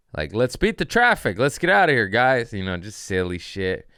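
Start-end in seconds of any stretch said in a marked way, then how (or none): 0.4-2.6 high, loud, mocking heckling. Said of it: "he's heckling from up top, just yelling out shit".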